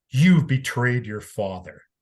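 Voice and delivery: mock-angry tone. Telling a story about the speaker's dying dad, retelling an angry accusation. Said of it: "he angrily says".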